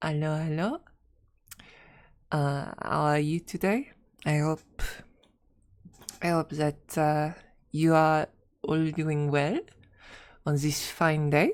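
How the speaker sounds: unpolished put-on French accent. Trying out a voice for a clockwork automaton, greeting everyone: put-on french accent. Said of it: "Have I ever done a French accent?".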